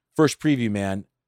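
normal talking voice

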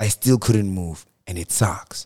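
mock dramatic, emotional acted delivery. Telling another speaker a story while voice acting: put-on emotional delivery. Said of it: "I'm adding emotion".

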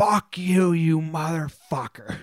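slow, drawn-out, held-in venting curse. Retelling what a pitcher screamed after a strikeout: imitating a pitcher screaming. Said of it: "just screamed into the ether".

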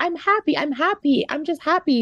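mock speaking through tears, high-pitched. Retelling how she answered the nurse, acting out speaking through tears. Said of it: "trying to tell her within tears".

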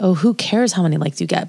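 plain

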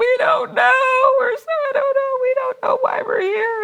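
very high-pitched, tearful, blubbering crying voice. Retelling the girls answering the director: imitating crying.

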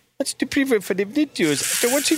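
put-on Indian accent. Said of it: "with an Indian accent?".

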